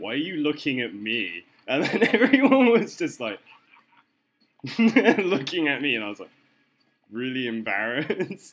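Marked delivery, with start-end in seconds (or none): 0.0-1.4 loud, high-pitched raised voice. Retelling an embarrassing moment with friends, reenact asking him loudly in front of everyone. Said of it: "I said to him loudly in front of everyone".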